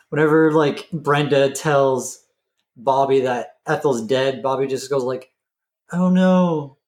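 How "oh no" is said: mock flat deadpan, slightly high, no emotion. Retelling how Bobby reacts to hearing Ethel is dead: imitating Bobby with no emotion. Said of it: "very, like, no emotion".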